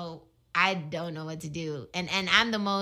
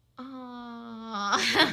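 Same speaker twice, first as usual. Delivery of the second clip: put-on fake sympathy, higher pitch; 5 semitones higher than usual. Showing how they react when someone cries: imitating a fake aw. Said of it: "That's such a fake aw".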